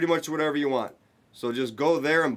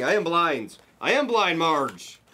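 slow, drawn-out, repeated yelling; 4 semitones higher than usual. Speaking to marge, yelling. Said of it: "Yelling at me?".

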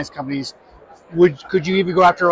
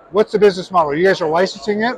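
speaking with mouth full of food. Interviewer asking a guest about the business model while eating, mouth full. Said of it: "as I talk with food in my mouth".

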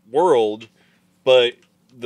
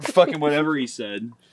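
normal talking voice

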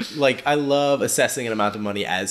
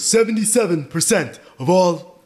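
put-on husky old man voice, higher; 8 semitones higher, 4 dB louder than usual. Showing the other speaker a huskier Bernie voice. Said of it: "It's a little bit huskier".

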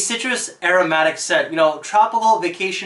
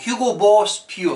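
badly done put-on Boston accent; 2 semitones higher than usual. Naming the hugo boss pure scent in a bad boston accent. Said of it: "That's my Boston accent".

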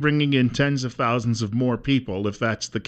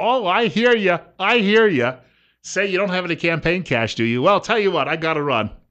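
mock polite dismissive tone, higher; 6 semitones higher than usual. Imitating two senators who nod and smile at a constituent: brushing someone off. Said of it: "they'll nod and smile and go".

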